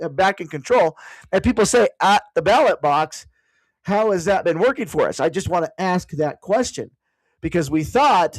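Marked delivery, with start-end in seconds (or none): none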